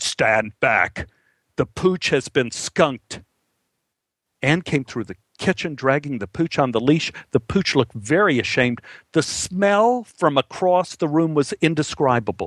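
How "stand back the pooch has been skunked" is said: possessed, demonic horror-film voice. Retelling what Anne said coming through the back door, imitating Anne's exorcist voice. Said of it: "Anne put on her exorcist voice again and said".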